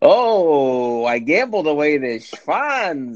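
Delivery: put-on accent with Yiddish-inflected sound.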